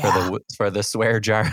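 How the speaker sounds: ordinary delivery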